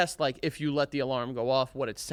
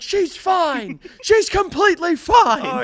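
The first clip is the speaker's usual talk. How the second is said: very loud, very high, slow, frustrated yell; 10 dB louder than usual. Retelling answering an emergency call box from far away: imitating own past yelling. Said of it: "So I'm yelling over to this box".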